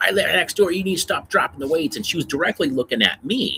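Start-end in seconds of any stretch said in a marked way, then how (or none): 0.0-2.0 high-pitched, loud screaming, acted out. Retelling how a neighbor in the gym yelled at everybody: imitating a neighbor screaming. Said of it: "screaming at".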